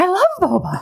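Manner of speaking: play-acted, very high, perky tone. Retelling a TV scene where Mel perks up at boba: Mel perking up, imitated. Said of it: "she perks up and looks at him and smiles".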